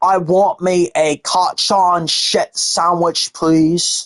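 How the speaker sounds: put-on English accent. Retelling what the speaker said earlier to a co-host, in an english accent. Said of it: "I said in an English accent".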